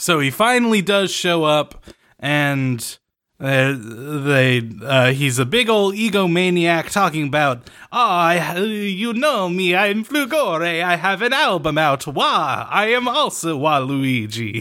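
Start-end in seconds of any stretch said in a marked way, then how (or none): 7.9-14.6 exaggerated Italian accent. Retelling the character's boastful speech: Flugore's offensively Italian accent. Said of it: "His accent is, like, offensively Italian".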